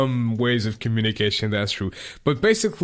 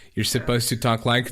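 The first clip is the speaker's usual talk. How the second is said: normal talking voice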